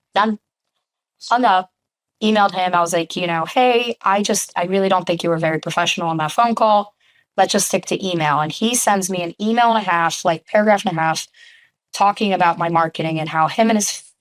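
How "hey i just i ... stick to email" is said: ordinary delivery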